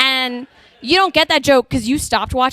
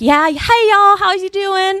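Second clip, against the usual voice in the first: put-on laid-back, pitched-up Texas Southern American accent; 7 semitones higher, 3 dB louder than usual. A texas-raised speaker recalls the southern accent suddenly coming out, in a southern accent. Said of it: "my southern accent came out".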